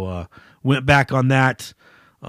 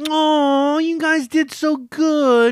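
mock patronizing, condescending, talking-down tone; 13 semitones higher than usual. Mimicking someone condescendingly patting another on the head: mock-condescending praise. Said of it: "condescendingly patting him on the head and saying".

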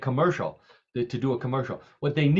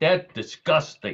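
best attempt at put-on New York accent; 3 semitones higher than usual. Acting out how people in new york would react to an odd order, new york accent. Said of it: "in their best New York accent".

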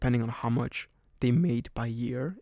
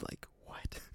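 mock-bewildered "what?", much quieter. Retelling a man's reaction after being yelled back at; imitating a bewildered 'what?'. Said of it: "he was so like bewildered".

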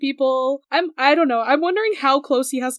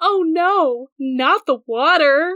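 play-acted very slow, deadpan, sarcastic drawl; 3 semitones higher, 3 dB louder than usual. Retelling a scene where a character is dragged into water: sarcastic Percy line. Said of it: "Sarcasm, sarcasm".

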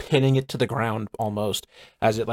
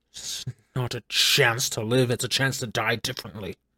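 put-on fiend character voice. A captured fiend cultist answers its captors in a game, fiend cultist voice. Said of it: "More fiend. This is a fiend of some kind. / you shall all feel the wrath of our lord".

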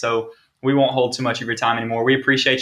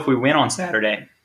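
voice cracking, much slower. Speaker retelling what he told a man beside him, voice cracking. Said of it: "voice crack again".

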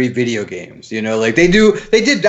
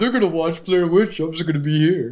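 quiet, dramatic, mock mopey, self-pitying teenage voice; 3 semitones higher, 5 dB quieter than usual. Retelling sitting on the curb while the others watched the movie: imitating own past sad self. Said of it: "me getting all sad".

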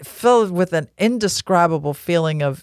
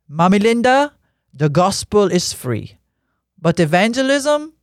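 put-on Haitian-accented speech; 2 semitones higher than usual. Retelling what Maxo said to her about money for Jeremy, imitating Maxo's thick Haitian accent. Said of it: "with this thick Haitian accent".

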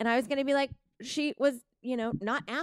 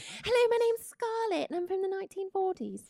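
put-on sudden British accent, much higher pitch; 9 semitones higher than usual. Voicing a character from the 1940s introducing herself, sudden British accent. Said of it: "I went British all of a sudden there".

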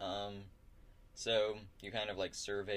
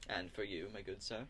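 usual speaking voice

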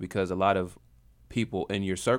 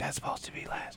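soft, very hushed, breathy whisper. Retelling what the other speaker just said: imitating a whisper. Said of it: "you hear him whisper".

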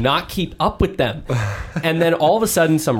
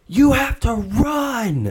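put-on very slow, high shout, stretched long; 7 semitones higher than usual. Struggling at mile 13, speaker retells friends urging them on, imitating a yell. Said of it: "Stop yelling at me".

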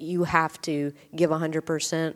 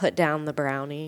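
ordinary talk

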